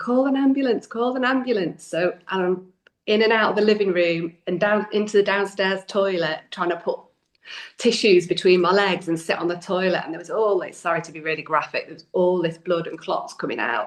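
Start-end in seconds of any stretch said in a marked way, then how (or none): 0.0-1.8 acted, high, repeated shouting at full volume. A mother recounts an emergency at home after putting the baby down; retelling her own shouting. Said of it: "And I'm shouting".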